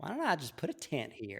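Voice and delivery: Texas accent, put on for fun, swooping. Echoing what the other speaker just said, in a put-on Texas accent. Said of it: "channeled some like Texas accent".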